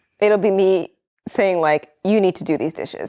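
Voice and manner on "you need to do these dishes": mock bossy, stern, direct tone with no softening. Retelling how a chore request comes out: imitating own stern order. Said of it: "you give directions very sternly".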